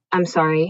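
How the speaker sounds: put-on mumble, quiet and barely audible. Retelling how a woman at the game apologized: imitating a barely quiet mumble. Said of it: "she mumbled as barely quiet as she could".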